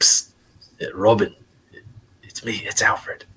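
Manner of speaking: slow, secretive, hushed psst whisper. A character looks over at another character and whispers: whispering. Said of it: "looks over at Robin and whispers".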